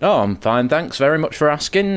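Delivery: put-on curt Yorkshire accent. Telling a story, the speaker quotes a man's reply, imitating brusque yorkshire accent. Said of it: "in his brusque Yorkshire accent".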